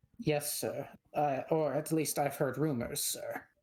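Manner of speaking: hesitant, deferential, nervous stammering. A sergeant answers his superior's questions about a sick noble, nervous, stuttering. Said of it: "And you can see he wasn't expecting a dwarf. / He's nervous. / [name], / He's stuttering. / He's nervous".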